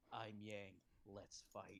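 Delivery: slow, cool, straightforward badass delivery. Acting out a line for Yang in the series: badass, straightforward delivery. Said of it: "it just says it in a really badass way".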